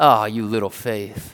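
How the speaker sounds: low, snide, mocking, belittling tone. Speaker imagining Jesus saying the line as a dig: acting out a mocking dig. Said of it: "interpret this as a dig".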